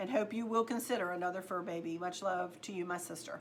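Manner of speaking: ordinary talk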